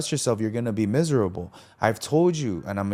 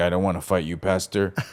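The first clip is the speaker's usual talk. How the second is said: angry, mad outburst in a lower pitch; 5 semitones lower than usual. Retelling an argument with the pastor: retelling own angry words. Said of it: "all mad".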